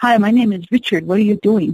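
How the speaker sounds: put-on Viennese accent, man's voice. Retelling meeting a man who spoke Navajo, imitating Richard's Viennese accent. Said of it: "with his Viennese accent".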